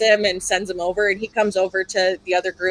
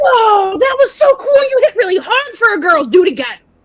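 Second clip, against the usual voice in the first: very loud, very high, hyped-up excited gushing shout; 13 semitones higher, 8 dB louder than usual. Voicing a prisoner cheering after being punched: super excited, amped up. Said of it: "and he's like".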